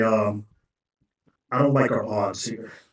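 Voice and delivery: very slow, hushed conspiratorial murmur. A character leans over to warn the others, quiet conspiratorial aside. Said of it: "lean over conspiratorially to the others".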